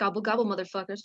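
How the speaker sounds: soft muttering under the breath. Role-player voicing Nikor right after a fight with turkeys: muttering under her breath. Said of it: "just mutters under her breath".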